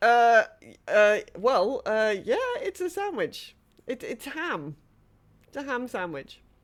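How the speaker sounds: startled, bewildered, flustered, stammering. Voicing a startled character caught holding a sandwich: confused, flustered. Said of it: "is looking confusedly around".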